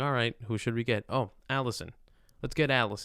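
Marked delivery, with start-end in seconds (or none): none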